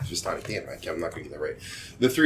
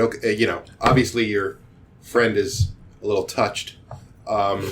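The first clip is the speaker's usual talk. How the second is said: ordinary delivery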